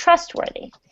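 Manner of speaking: trustworthy with stress on the first syllable, trust. Vocabulary lesson, saying the word for learners: stress first syllable of trustworthy. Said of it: "the emphasis is on the trust part".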